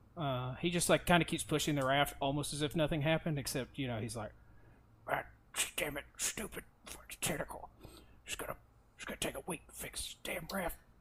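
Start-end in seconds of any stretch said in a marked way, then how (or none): 5.1-10.8 whispered, hushed grumbling mumble. Narrating Derek as he keeps pushing the raft: mumbling as Derek. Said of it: "Derek is mumbling as he keeps pushing".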